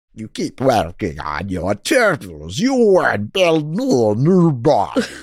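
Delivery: swooping, pitch-swinging cartoon alien villain voice. Speaker riffing on Krang from Ninja Turtles for a listener: Krang voice. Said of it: "You got a voice actor career in there".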